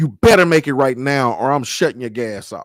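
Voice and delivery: loud, scornful, contemptuous delivery. Retelling what the gas company worker said at the door: imitating someone speaking with disdain. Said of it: "with disdain and says".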